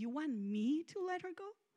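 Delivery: gentle, softened, hushed voice. Retelling God's reply to the pleading, in a softened voice. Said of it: "his voice softening and saying".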